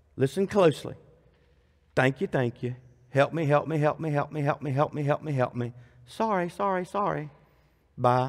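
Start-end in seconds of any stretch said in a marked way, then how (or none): 1.9-8.3 impersonal, mechanical, rote, by-the-numbers delivery. Imitating how people pray, mocking impersonal rote prayer. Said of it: "So impersonable".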